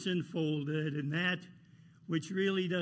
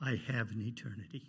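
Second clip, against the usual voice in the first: soft, hushed half-whisper; 6 semitones lower, 6 dB quieter than usual. Picturing someone at the feet of Jesus answering a voice: imitating a half-whisper. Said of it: "just whispering".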